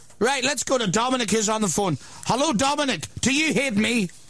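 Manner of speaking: put-on Northern Irish radio-host voice.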